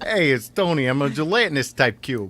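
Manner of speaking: put-on very loud, high, belted Bronx New York accent. Introducing a character named Tony, in Tony's Bronx New York accent. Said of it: "he speaks with a Bronx, like a Bronx, New York accent".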